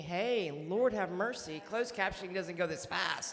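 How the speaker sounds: loud voice, cracking up laughing.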